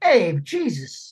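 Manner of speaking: put-on heavy, thick Brooklyn street accent. Describing Harvey Keitel playing Judas in a film, thick Brooklyn accent as Harvey Keitel. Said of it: "he had like a thick Brooklyn accent".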